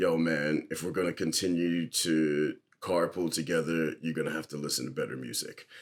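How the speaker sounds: very low, dead-level, flat droning monotone. Retelling what his carpool buddy said after they got out of the car, in monotone. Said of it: "very, very like monotone".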